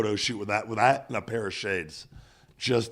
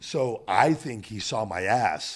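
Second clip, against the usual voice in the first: usual speaking voice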